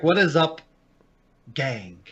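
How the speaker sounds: long dramatic pause held before the word gang. Show greeting done as a William Shatner spinoff; William Shatner pause before gang. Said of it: "that pause for effect".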